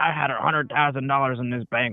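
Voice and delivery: put-on angry, freaking-out outburst. Retelling a bank customer's complaint: imitating a customer freaking out. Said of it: "they freak out and they flip out".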